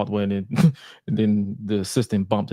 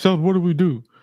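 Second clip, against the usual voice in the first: acted, very high, loud, scolding, disappointed-father yell; 9 semitones higher, 5 dB louder than usual. Retelling what one man yelled at another, mock-yelling like a disappointed father. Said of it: "he was yelling at him like a like a disappointed father".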